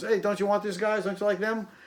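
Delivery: high, calling-out shout. Retelling what Brian yelled while digging through records: imitating Brian yelling. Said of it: "Brian yells".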